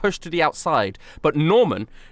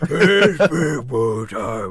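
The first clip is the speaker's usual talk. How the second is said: noticeably deeper, dropped voice; 5 semitones lower than usual. A player voicing an NPC in this moment, noticeably deeper voice. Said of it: "her voice gets like noticeably deeper".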